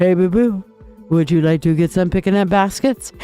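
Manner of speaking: animated cartoon bear character voice. Doing a tarot reading, imitating a cartoon bear: Yogi Bear voice. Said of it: "he is Yogi Bear".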